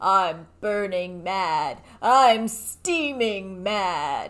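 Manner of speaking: unexpectedly deep, low, drawn-out doll voice. Describing a doll character and quoting its line, in a deep, low doll voice. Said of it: "It's deep, it's low".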